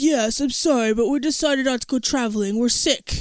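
deliberately deepened, put-on, faked deep voice. Retelling his answer to a woman calling through the mail slot, deepened voice. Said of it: "Rush is deepening his voice".

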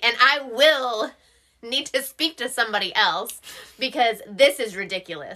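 very loud, stern, harsh, unrestrained authority voice. Retelling a call to the warranty people: imitating own raised authority voice. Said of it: "I'm not gonna raise my voice as loud as I raised it".

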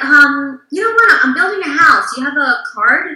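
acted cool, calm, offhand. Retelling a man's first words to the speaker, imitating a nonchalant tone. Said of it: "kind of like nonchalant".

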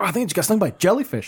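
high-pitched, cartoonish comic-book style voice. Retelling a friend getting stung by a jellyfish: imitating Nico like a comic book. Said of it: "make me sound like a comic book".

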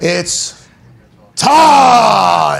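ring-announcer style, "it's" and "time" stretched out. Showing another speaker how Bruce Buffer says his phrase, drawn-out Bruce Buffer impression. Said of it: "The it's is really drawn out".

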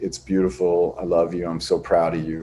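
hushed, soft half-whisper with no voice at all. Speaker retells what Rhea half-whispered during a date, retelling a half-whisper. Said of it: "Rhea whispers".

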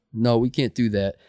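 ordinary delivery

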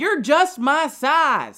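put-on weird, loud, slow, drawn-out Southern accent. Retelling what a heckler yelled out at a show: weirdly Southern accent. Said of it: "the weirdly Southern accent".

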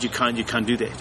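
ordinary delivery

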